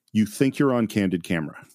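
normal talking voice

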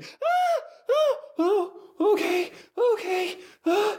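very high, long, drawn-out shrieking screams. Voicing a character thrown off a precipice as she falls, screaming while falling. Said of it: "And then she's screaming".

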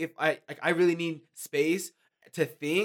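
plain

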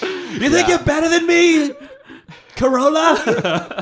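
very high, shrill, loud hollering yell. Joking about someone yelling at parked cars, mock yelling at parked cars. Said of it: "yelling at the parked cars".

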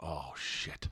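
very low, quiet, dread-filled muttering under the breath.

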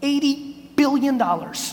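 slow, drawn-out delivery.

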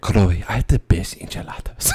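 put-on Spanish accent. Quoting someone speaking to Chloe; Puss in Boots accent. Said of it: "It's like I was hearing like Puss in Boots".

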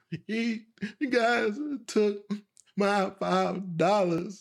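high, drawn-out, blubbering, tearful sobbing. Retelling being robbed as a child and telling grandmother, imitating his own childhood sobbing. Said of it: "I'm just going crazy right now, just, like, slobbering".

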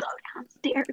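soft, breathy whisper under the breath. Acting out a past exchange with hand signals, retelling a whisper. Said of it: "I'm whispering".

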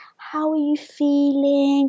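put-on sad voice. Imitating how the speaker's mom asks how they feel; imitating mom's sad voice. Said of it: "but like the sad voice".

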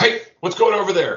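very high, loud guard-style yell. Game master voicing a character calling out from around a corner; yelling in a blue coat guard voice. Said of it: "using his best non-retired blue coat's voice, yell out".

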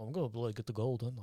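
very quiet, low pirate mumble, barely audible. Trading impressions with others, the speaker tries Captain Jack: mumbling Jack Sparrow impression. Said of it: "Jack Sparrow is just like".

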